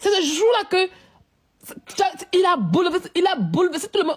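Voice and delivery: welling up, tearful voice close to crying. Talking about Arafat and how it moved everyone, tearful, close to crying. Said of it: "j'ai les larmes aux yeux".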